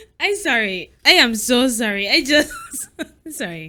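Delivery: laughing while talking. Apologizing to the co-host for laughing during the intro: laughing while talking. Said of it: "Why are you laughing like that?".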